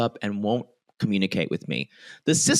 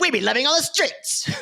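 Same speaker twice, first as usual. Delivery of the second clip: very high, squeaky voice, pitch pushed way up; 12 semitones higher than usual. Retelling a reply from the show in the person's voice: imitating Stacey's voice. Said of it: "we're doing this in their voices".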